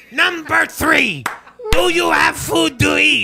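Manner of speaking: loud, grating put-on voice. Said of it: "my best Gilbert Gottfried impression here of Pat Robertson".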